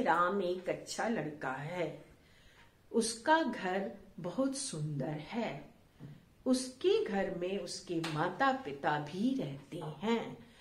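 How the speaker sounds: sentence by sentence, long pause at each end. Hindi lesson on full stops, long pause after each sentence. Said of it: "यहां पर हमने थोड़े अधिक अधिक देर तक ठहराव किया हर वाक्य के अंत में।".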